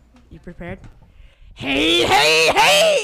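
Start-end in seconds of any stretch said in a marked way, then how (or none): 1.5-3.0 very high, very loud, shrill anime-character yell. Speaker announces an anime impression into a microphone, anime character impression. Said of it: "my amazing anime impression".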